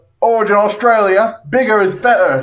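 poorly done put-on Australian accent. Trying out an accent nobody has done yet: bad put-on australian accent. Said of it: "Try out this Australian accent here".

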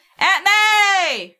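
high, loud, drawn-out shout, May stretched long. In a tabletop game, a player's character shouts out for aunt may. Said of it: "I shout".

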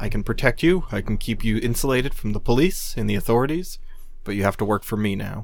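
ordinary talk, nothing marked

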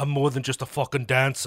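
loud, put-on Irish accent. Acting out what the man they're discussing would say, in an Irish-sounding accent. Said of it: "Is that your Irish accent?".

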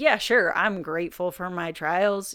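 mocking, eye-roll, sarcastic, insincere tone. Showing sarcastic gratitude for one's trials: sarcastic tone. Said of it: "If I only practice sarcasm in my gratitude, like".

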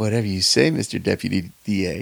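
sultry, seductive, sexy come-on tone. Retelling a waitress's line from a movie scene: imitating a sexy tone. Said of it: "kind of in a sexy way".

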